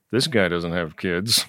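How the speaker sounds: mock mutter under breath. Retelling what mom muttered in a stranger's house: imitating a mutter under the breath. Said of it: "my mom muttered under her breath".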